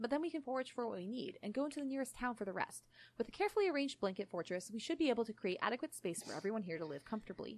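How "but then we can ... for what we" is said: plain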